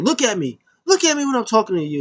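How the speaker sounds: put-on, insistent, high, swooping screaming. Retelling a wrestling segment, quoting a woman: imitating someone screaming. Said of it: "She's screaming at her".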